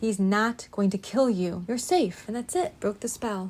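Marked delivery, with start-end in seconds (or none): 0.0-2.2 very authoritative, loud, firm, leaving no doubt. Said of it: "And he said it twice".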